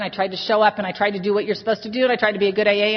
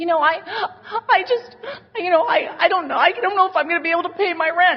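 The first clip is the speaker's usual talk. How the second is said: high, tearful crying voice, weepy stumbling words; 9 semitones higher than usual. Retelling what a woman said back at the house: imitating a crying woman. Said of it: "She's crying".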